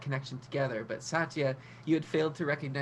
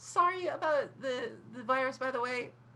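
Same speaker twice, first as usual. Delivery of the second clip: very high, tiny voice, slow; 10 semitones higher than usual. A voice from the corner pipe speaks to Sable, in a tiny voice. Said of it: "tiny voice".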